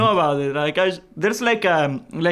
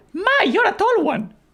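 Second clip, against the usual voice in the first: very high, squeaky gnome voice. Told by the others to do a voice, attempting a gnome voice. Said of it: "he's like a gnome from".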